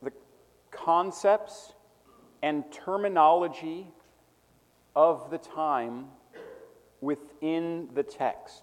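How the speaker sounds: slow, paused, dictation-like delivery. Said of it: "I can repeat it again".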